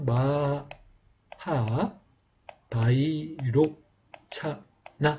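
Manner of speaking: breaks after 마하 and 바이로, then 차나. Teaching how to divide a long name into parts: pauses between 마하, 바이로, 차나. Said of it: "이렇게 끊어주시면 되겠습니다".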